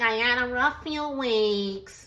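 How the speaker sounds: put-on nasal voice. Retelling a scene from the episode, as Britt: nasally voice. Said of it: "she got that nasally voice".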